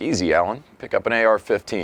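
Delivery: plain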